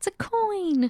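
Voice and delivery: high, squeaky, thrilled, poorly done mock Irish accent.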